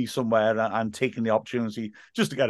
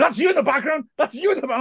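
mock very high, repeated, excited child-like screaming; 4 dB louder than usual. Retelling how the first years reacted on seeing him on TV, imitating kids screaming. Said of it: "they just kept screaming".

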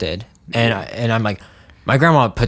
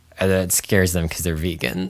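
usual speaking voice

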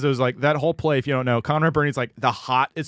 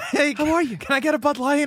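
put-on Boston tough-guy voice, pitched higher; 11 semitones higher than usual. Recalling a stand-up set, doing a Mark Wahlberg impression. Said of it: "I did do a Wahlberg".

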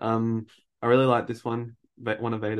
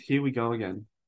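usual speaking voice

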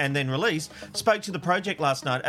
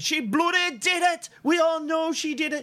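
very high, ranting scream, acted out; 13 semitones higher than usual. Recalling a childhood memory of dad at the tv, retelling dad screaming at tv. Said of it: "my dad would be screaming at the TV".

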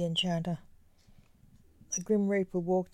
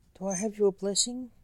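ordinary delivery, nothing marked

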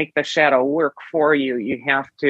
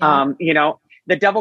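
ordinary talk

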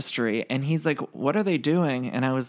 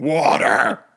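loud shouting, put-on voice dropped way down; 6 dB louder than usual. Retelling a hungover Luann shouting for water: imitating Luann's low hungover shout. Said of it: "she just kept shouting".

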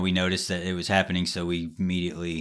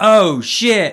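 put-on very high, loud, startled little-kid cry; 13 semitones higher, 11 dB louder than usual. Retelling a daughter's first swear at bedtime: imitating a shocked toddler. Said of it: "made her shocked face".

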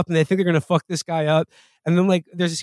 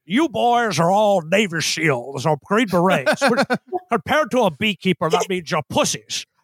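put-on American accent. Retelling a scene from a show: Jeremy Irons doing an American accent. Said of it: "my impression of Jeremy Irons doing an American accent".

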